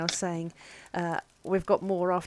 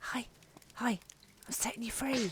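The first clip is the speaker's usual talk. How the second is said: very quiet, soft, high hushed whisper; 5 semitones higher, 9 dB quieter than usual. A player's character whispers to the guys inside the lock, whispering very quietly. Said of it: "I'm just gonna whisper very quietly".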